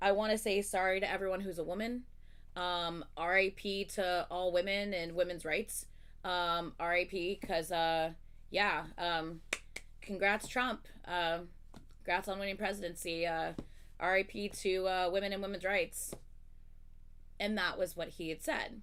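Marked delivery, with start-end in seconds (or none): none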